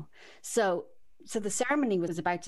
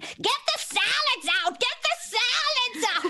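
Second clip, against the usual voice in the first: shrill, very high-pitched yelling; 5 dB louder than usual. Retelling a wedding, quote the mother of the bride on the lawn: imitating a yelling mother. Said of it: "She was yelling".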